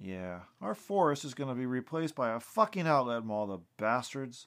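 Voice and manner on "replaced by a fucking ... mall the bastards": plain reading voice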